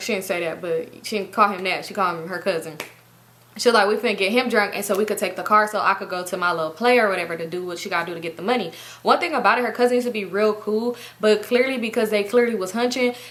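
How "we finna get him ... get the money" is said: normal talking voice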